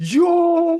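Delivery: very high, very loud, shrill, drawn-out scream. Retelling his reaction when the buzzer beater went in: imitating his own scream. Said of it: "I screamed".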